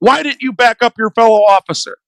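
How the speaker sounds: ordinary talk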